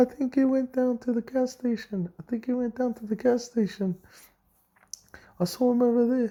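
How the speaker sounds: squeaky, very high-pitched voice. Retelling what Jake's younger brother said, in George's high-pitched voice. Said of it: "he said in his high pitched voice".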